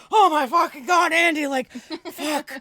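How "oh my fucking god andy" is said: panicked, terrified, very loud, high shriek. Retelling a man walking into the kitchen unexpectedly; retelling own terrified outburst. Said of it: "And I was like terrified".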